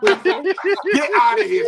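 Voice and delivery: high, slow, laughing, dismissive delivery.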